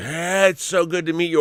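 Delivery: douchey, cheesy come-on manner. Retelling a guy's opening line to a girl at a bar: imitating a douchey guy's pickup line. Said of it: "monstrous douchebaggery".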